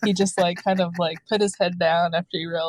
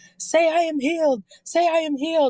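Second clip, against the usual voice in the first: very high, yelling preacher voice; 10 semitones higher than usual. Telling about a church service, the speaker acts out the pastor praying over a woman, retelling a yell. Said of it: "he's yelling".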